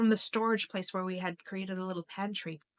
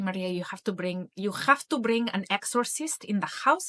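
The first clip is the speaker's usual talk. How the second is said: bad put-on Greek accent; 4 dB louder than usual. Quoting the speaker's mother, in a very bad imitation of a greek accent. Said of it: "my very bad imitation of my mother's Greek accent".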